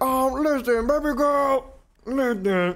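put-on ugly dude voice. Imitating how a game character talks: Baraka voice. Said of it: "That's the Baraka voice".

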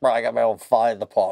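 low, fast, bragging rich guy voice.

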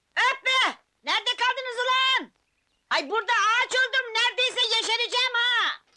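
loud, high-pitched yelling. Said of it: "bağırma be".

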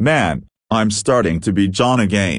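ordinary delivery, nothing marked

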